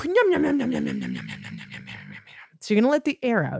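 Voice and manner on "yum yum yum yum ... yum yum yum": very low, rough voice with swooping pitch. Leading a pancake breath exercise, the speaker breathes out in a Cookie Monster voice. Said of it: "You're going to sound a little bit like a cookie monster".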